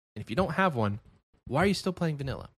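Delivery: condescending, patronizing voice. Host asking viewers this week's community question, condescending. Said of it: "That sounded very condescending".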